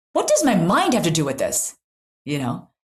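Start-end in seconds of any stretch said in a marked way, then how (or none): 0.1-1.7 acted, loud, swooping, angry and upset retort. Retelling how a patient reacted to a question: imitating an angry patient. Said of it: "her getting really angry and saying".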